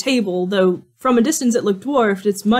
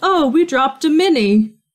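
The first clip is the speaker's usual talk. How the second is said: drawn-out, slow, high-pitched giant voice; 6 semitones higher than usual. Voicing a giant who leans down and says something. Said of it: "he starts to lean down towards you, and he says".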